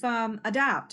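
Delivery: normal talking voice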